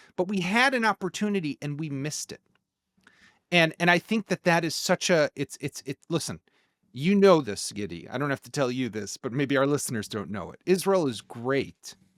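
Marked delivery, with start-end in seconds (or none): 10.7-11.9 sarcastic tone, meaning the opposite. Discussing missed opportunities with another speaker: said sarcastically. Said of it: "I say that sarcastically".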